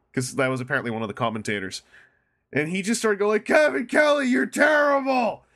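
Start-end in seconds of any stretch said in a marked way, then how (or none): 3.5-5.3 mock very high, slow, drawn-out drunken yell. Retelling a soused guy yelling at a commentator: retelling a drunken yell. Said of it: "yelling at him".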